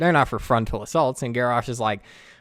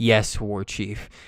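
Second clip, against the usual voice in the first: mock speaking through clenched teeth; 3 semitones lower than usual. Retelling a humiliated story character answering the war chief: mock speaking through clenched teeth. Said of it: "he says through clenched teeth".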